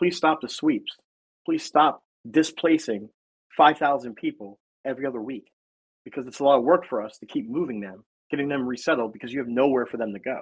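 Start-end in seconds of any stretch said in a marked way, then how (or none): none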